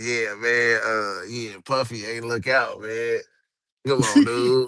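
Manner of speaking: put-on street drawl voice.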